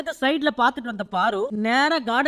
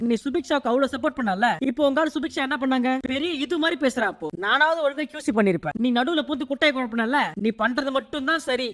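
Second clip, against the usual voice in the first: normal talking voice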